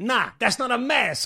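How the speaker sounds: put-on strong Italian accent. Retelling a man showing how not to wear a mask, in a Goomba Italian accent. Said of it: "doing his Goomba Italian thing".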